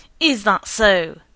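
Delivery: angrily. A husband answers his wife's reassurance, angry.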